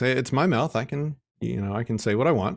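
breezy, nonchalant delivery. Retelling his son's reply to the neighbors: imitating a nonchalant kid. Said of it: "very nonchalant".

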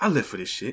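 offhand, easy, unforced delivery. Imitating a movie character's line, said not hard this time: imitating an unforced, not-hard delivery. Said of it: "He doesn't say it all hard this time".

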